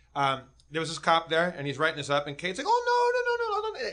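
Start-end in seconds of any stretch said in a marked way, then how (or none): 2.7-4.0 put-on Scottish woman's falsetto, much higher. Retelling how Kate talked to a cop writing a ticket, in Kate's Scottish falsetto. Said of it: "talking to him in like Scottish falsetto".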